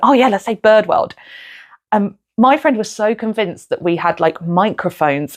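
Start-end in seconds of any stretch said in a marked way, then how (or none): 0.0-1.2 put-on, playful giggling through the words. Retelling how friends in the audience planned a location: imitating friends giggling. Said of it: "giggling, going".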